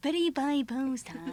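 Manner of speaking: slow puppet voice, every word drawn out. Doing an impression of Ronald Reagan from a music video: Ronald Reagan impression. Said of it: "But he goes".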